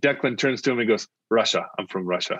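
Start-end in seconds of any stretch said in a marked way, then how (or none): 1.3-2.4 flat, low, instant deadpan with no pause. Retelling a friend's answer when asked where he's from, retelling a deadpan reply. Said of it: "And deadpan without pause".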